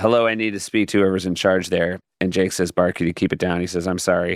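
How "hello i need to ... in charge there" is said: normal talking voice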